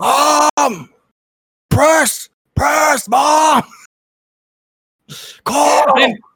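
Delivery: very high, shrill, loud furious yelling. Coaching mom while playing, mock-angry Tom Thibodeau yelling. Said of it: "I got to get in the Tom Thibodeau mindset".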